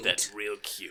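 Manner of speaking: deep put-on woman's voice. Voicing an NPC who answers a pickup line: deep Doctor Girlfriend voice. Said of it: "You do a really good job at that".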